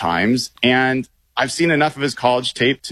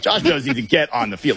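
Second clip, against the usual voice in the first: firm, stern, no-nonsense parental tone. Retelling a coach's words about a player: imitating Mike McDonald's stern parent voice. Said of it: "that was the stern parent".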